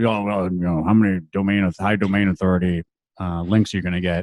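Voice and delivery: put-on gruff voice. Imitating people who ask about domain authority links: imitating a gruff client voice. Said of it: "that's my gruff domain authority voice".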